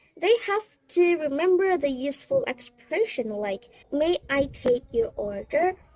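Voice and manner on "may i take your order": ordinary talk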